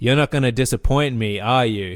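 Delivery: put-on creepy voice. Retelling a creepy movie line: creepy Angus Macfadyen imitation. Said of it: "the creepy thing that Angus McFadden says".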